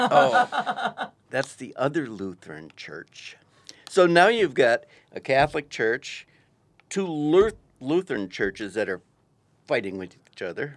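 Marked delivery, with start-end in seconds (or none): 0.0-3.4 slow, swooping, mock mildly scornful tone. Retelling what the people at the wrong church said: imitating someone saying it with scorn. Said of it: "they said it with a little scorn".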